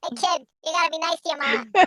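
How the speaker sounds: very high, soft big dog voice. Voicing a big German Shepherd talking to a kid, high German Shepherd voice. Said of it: "It's got to be a high voice".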